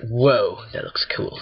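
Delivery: odd, weird, goofy, silly put-on voice. Streaming a game to viewers, weird voice. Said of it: "like in that weird voice".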